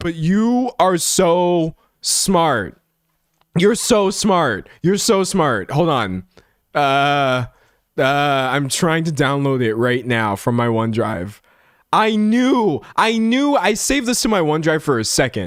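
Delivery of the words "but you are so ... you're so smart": loud excited voice, higher. Reacting to a chat suggestion while streaming: being really loud. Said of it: "I'm being really loud".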